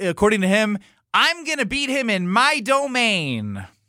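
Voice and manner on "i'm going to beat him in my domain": high, sing-song, swooping, drawn-out nerdy voice. Retelling a bowling rival's boast: Jesse Nelson impression. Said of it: "That wasn't the best Jesse Nelson".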